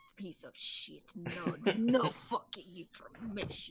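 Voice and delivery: muttering under the breath. Voicing a character walking off after a conversation: muttering under her breath. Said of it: "she's, like, muttering under her breath".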